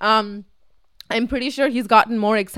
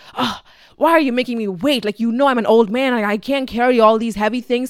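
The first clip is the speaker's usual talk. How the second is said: put-on angry, complaining voice. Retelling a surprise visit, imitating an angry complaining father. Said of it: "he walks in complaining".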